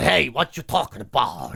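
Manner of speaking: low, overdone, exaggerated Boston accent. Recounting mimicking Boston gangsters on the podcast, in a Boston accent. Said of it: "doing the Boston accent".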